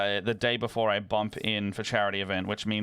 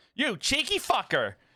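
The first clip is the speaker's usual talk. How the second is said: very high-pitched, fake, put-on American accent. Reading a meme caption aloud: put-on American accent. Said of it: "your American accent when you say that".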